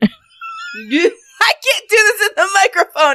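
slow, high laughing through tears.

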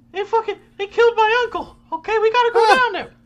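put-on small falsetto voice. Acting out a line from a movie: tiny falsetto Mark Wahlberg. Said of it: "I'm doing it like a tiny falsetto Mark Wahlberg".

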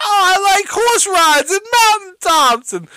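put-on very high, girly comic voice. Retelling a comedian's bit where he pretends to be a stripper: imitating a comic playing a girl. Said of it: "pretending to be the girl".

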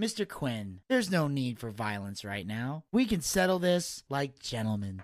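slow, unruffled condescension. Retelling how a wrestler answers a threat, imitating Gacy's calm condescension. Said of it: "He never raises his voice".

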